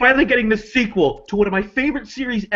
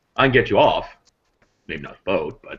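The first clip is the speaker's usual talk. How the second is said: very low, completely deadpan voice. Quoting a favorite line from Alien Resurrection, answer the woman in a completely deadpan Ron Perlman impression. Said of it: "completely deadpan".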